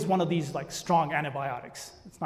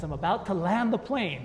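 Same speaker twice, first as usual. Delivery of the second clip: plain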